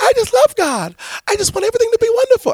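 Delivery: very high, gushing, sing-song bubbly voice. Speaker acts out how a bubbly person talks, in a mock-bubbly voice. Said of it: "I don't know why I'm talking like that".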